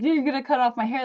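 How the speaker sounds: put-on, high, teary, weepy crying voice. Retelling being told about surgery, imitating own crying.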